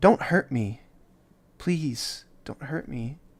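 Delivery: otherworldly voice. An orb moving back toward the group speaks; ethereal voice. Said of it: "ethereal voice go".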